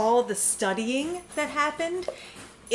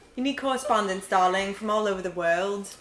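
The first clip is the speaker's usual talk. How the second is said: heavy put-on British accent; 3 semitones lower than usual. Redoing a mock NPR intro after being teased: fake British accent. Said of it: "took a big British shit all over it".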